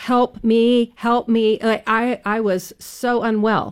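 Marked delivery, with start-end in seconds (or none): 0.0-1.6 acted screaming, higher pitched. Retelling screaming during a fast ride: imitating own past screaming for help. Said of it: "I was screaming, like, for my life".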